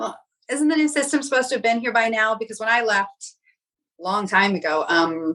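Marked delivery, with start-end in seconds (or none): 0.0-2.3 sarcastic, pointed, jabbing delivery. Retelling a question once put to a mom: imitating own sarcastic question. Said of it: "kind of sarcastically saying".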